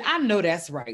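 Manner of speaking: ordinary talk, nothing marked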